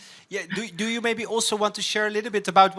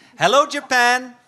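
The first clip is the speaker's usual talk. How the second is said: loud, high shout. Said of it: "I'm shouting".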